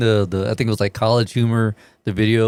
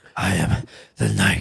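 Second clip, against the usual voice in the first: put-on gravelly superhero voice; 2 semitones lower, 3 dB quieter than usual.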